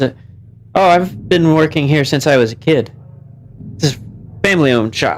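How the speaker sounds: normal talking voice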